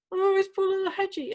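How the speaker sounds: mock sobbing, tearful, high, weepy crying voice. Retelling a housemate crying over a hedgehog: imitating someone crying.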